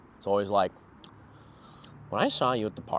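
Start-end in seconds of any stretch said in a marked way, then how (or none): 2.1-3.0 put-on villain voice with lip smacking, quieter. Showing another speaker a Joker impression: Joker impression. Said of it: "Can you do any good Joker impression?".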